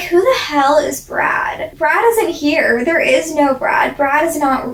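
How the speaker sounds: normal talking voice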